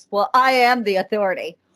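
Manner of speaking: ordinary talk, nothing marked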